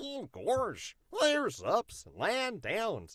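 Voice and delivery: soft, swooping, silly cartoon dog voice. A podcast host who welcomes guests in silly voices demonstrates a Goofy voice. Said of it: "and I love Goofy. It's like".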